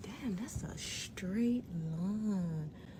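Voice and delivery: slow, hushed, amazed whisper.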